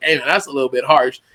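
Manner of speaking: usual speaking voice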